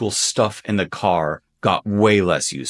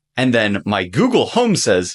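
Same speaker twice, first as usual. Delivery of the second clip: ordinary delivery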